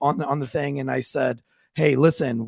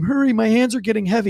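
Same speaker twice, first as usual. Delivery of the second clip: high, urgent hollering yell; 7 semitones higher than usual. Recounting holding a man at gunpoint in an attic, imitating the man yelling. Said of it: "he's yelling this whole time".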